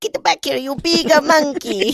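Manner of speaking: put-on Italian accent, pitched very high. Acting out an imagined Italian wife shouting at her husband: Mario voice. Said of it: "she does the Mario thing 'cause she's Italian".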